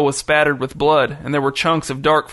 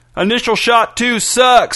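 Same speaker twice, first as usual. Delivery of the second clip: high shout at the top of the voice; 8 semitones higher, 4 dB louder than usual. Howie, on the tractor, answers a faltering Don Gershwin: shouted. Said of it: "shouted Howie".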